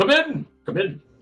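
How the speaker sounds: gruff-sounding voice. Voicing a blacksmith calling through the door: gruff voice. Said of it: "you hear a gruff".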